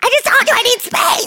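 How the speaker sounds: exasperated, scolding, reproachful tone.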